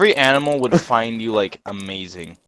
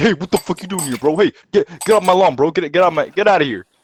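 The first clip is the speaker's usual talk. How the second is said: mock-angry small dog voice, much higher; 6 semitones higher, 5 dB louder than usual. Telling of the chihuahuas by his fence when he jogs, imitating angry chihuahuas. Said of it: "I just hear them going like".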